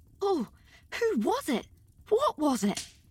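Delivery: frightened shivering whisper. Anne, cold and frightened after fleeing a room with Diana: frightened shivering whisper. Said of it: "whispered Anne, her teeth chattering with cold and fright".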